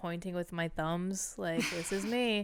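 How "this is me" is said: acted, clumsy, awkward, self-conscious little delivery. Retelling saying goodbye at the car after a date: imitating own awkward delivery. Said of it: "the awkward, like, bending my knees".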